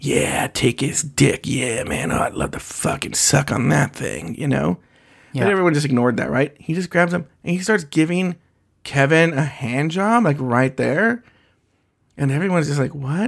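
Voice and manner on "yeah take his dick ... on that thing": mimicked mutter under breath, lower and slower. Recounting what a man was saying while something went on nearby; retelling muttering under his breath. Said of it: "he was like already saying under his breath".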